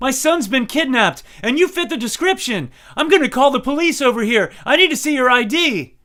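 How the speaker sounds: put-on, very loud, very high, shrill, frantic desperation. Retelling a woman demanding ID at the gate: imitating a panicked, desperate voice. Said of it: "panic and desperation in her voice".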